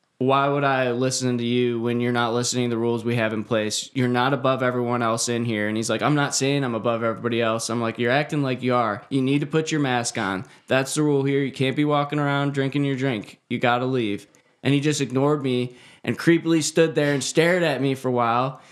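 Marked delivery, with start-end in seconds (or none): none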